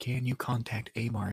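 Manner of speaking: hushed voice. Leaning in to speak in character so others can't hear: whispering. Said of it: "so that the rest of the group can't hear".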